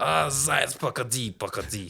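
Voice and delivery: slow, drawn-out cartoon wolf voice, Russian. Explaining a Russian cartoon, the speaker does the wolf chasing the rabbit: imitating the cartoon wolf. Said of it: "Anytime the wolf chases the rabbit, he goes".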